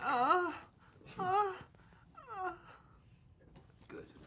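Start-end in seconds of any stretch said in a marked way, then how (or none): 0.0-2.5 put-on porn voice, much higher and quieter. Asked to do that porn voice again, the speaker obliges in a porn voice. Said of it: "that porn voice again".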